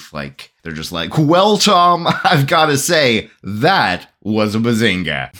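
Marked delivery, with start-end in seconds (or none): 1.2-5.3 high-pitched sports commentator play-by-play delivery. Imagining two announcers in their booth calling a play: sports announcer voice. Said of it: "announcer guys up in their booth".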